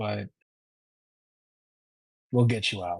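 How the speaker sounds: muttering, mumbling under his breath. Voicing a character standing before a flyer: muttering under his breath. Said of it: "muttering to, to, to himself un-, uh, under his breath".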